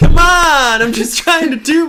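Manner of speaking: very high, drawn-out, loud complaining yell. Repeating the imitation of complaining actors, still shouting loudly. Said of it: "That's still really loud".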